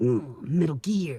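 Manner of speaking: put-on low, slow growling voice. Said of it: "do my Solid Snake impression".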